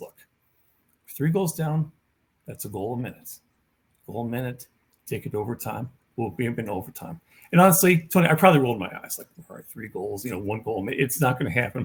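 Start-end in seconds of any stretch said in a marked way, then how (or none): 0.0-7.2 mock-calm, very calm, much quieter, unyelling talk. Speaker retells what she told the gathered team, imitating her very calm talk. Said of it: "and very calm, not yelling, not screaming".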